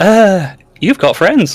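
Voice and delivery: very high, startled surprise. In a teasing back-and-forth between two characters, one answers, surprised. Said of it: "You sound surprised".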